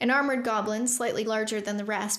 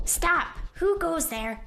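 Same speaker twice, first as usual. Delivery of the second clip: high, demanding goblin voice; 7 semitones higher than usual. Narrator reads a voice from the dark tunnel challenging the group: demanding goblin voice. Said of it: "A goblin voice demanded".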